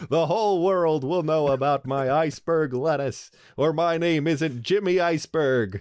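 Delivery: put-on old-timey fifties radio announcer voice. Improvising a part-time radio announcer and lettuce grower: Jimmy Iceberg fifties voice. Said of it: "back in the fifties, so everyone did sound like".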